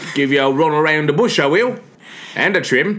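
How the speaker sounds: put-on accent heard as Australian. Playing a character offering a haircut at the parlour, in an Australian-sounding accent. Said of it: "Why is he Australian?".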